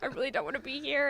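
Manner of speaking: high, tearful crying voice, fighting back sobs. Retelling standing in line at martial arts class as a child: retelling own crying. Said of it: "crying, and I was trying not to cry".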